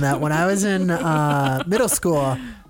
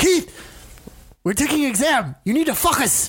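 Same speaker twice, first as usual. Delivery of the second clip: put-on very high, thick Spanish accent, "focus" as "fuck us"; 9 semitones higher than usual. Recalling a teacher scolding a student, the speaker imitates him in a thick Spanish accent. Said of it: "he had a very thick accent".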